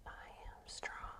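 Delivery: very soft, breathy whisper. Yoga instructor guiding a class through poses, whispered.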